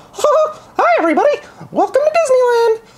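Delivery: very high voice swooping up and down. Briefly showing listeners the voice you do in your game videos, in a Mickey Mouse voice. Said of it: "which I will briefly do here".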